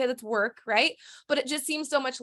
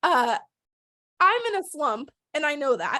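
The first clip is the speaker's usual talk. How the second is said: voice catching, choked-up, near tears; 3 semitones higher than usual. Speaker telling friends about their shared text thread, about to cry. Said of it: "I think that I'm gonna cry".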